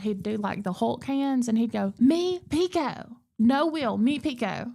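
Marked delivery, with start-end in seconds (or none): 2.0-4.7 put-on very slow, cross, insistent little-boy voice. Retelling how a little boy refused his name: imitating Pico getting mad. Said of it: "he would get so mad".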